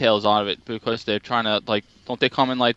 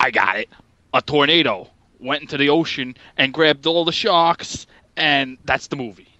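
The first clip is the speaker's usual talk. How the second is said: bad, shaky fake New York accent; 3 semitones higher than usual. Retelling how the movie's writers came up with it, in a Joe Orsino-ish fake New York accent. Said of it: "my terrible wannabe fake New York accent".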